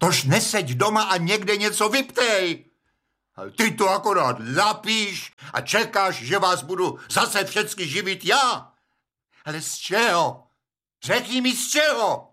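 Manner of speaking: high-pitched, furious, angry yelling. A father berates Rozina, the mother of the family: angry yelling. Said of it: "A na mámu už nekřičte".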